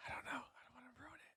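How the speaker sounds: whispering. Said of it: "Why are we whispering?".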